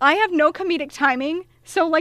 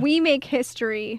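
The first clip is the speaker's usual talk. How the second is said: normal talking voice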